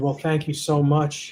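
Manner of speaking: ordinary delivery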